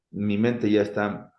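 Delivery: ordinary talk, nothing marked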